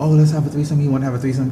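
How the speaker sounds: normal talking voice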